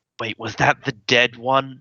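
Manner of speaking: overly loud stage whisper. Whispering in character to a companion, trying to be quiet: loud whisper. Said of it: "I whisper a bit louder than I should".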